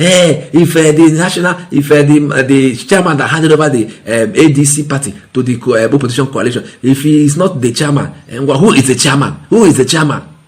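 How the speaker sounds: mock indignant, challenging tone.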